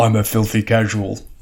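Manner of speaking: deepened, low put-on big-man voice. Describing how a fellow Magic player sees himself, imitating Joel's deep voice. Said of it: "I'm trying to have a deep voice like him".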